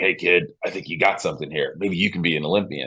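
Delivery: rough, rasping, encouraging coach voice. Retelling what a coach said after a race: imitating a raspy-voiced coach. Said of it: "he's got this really raspy voice".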